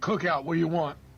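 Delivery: curt, brusque, no-nonsense Philadelphia tone. Retelling a Southern Cookout worker taking an order: imitating Philly attitude. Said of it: "his attitude is giving Philly in the window".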